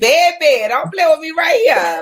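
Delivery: put-on New Orleans accent, phone voice. Imitating how the other speaker talks on the phone back home: imitating her New Orleans phone voice. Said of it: "You still get on the phone and be like".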